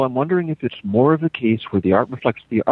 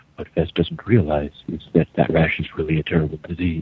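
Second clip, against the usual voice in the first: very low, ominous, foreboding voice; 7 semitones lower than usual. Showing what a real ominous voice sounds like, ominous voice. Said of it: "This is an ominous voice".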